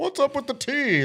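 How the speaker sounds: very high-pitched, casual, relaxed tone. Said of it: "Larry David's at the Boston Tea Party, and he's like".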